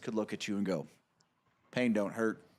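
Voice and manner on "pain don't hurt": utterly straight, dead-serious, level deadpan. Imitating a friend who could look at you and say it in all seriousness: imitating Mark in all seriousness. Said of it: "all seriousness".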